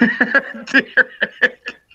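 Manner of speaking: high, laughing yelp. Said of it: "my laugh tends to change".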